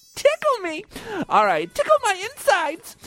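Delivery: very high, squeaky, swooping, sing-song puppet voice. Speaker joking about the news on Elmo's puppeteer: Elmo voice. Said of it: "I would want him to use the Elmo voice".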